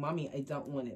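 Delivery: put-on reluctant baby voice. Voicing a baby who refuses the pacifier: voicing the baby's reply. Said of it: "It's like".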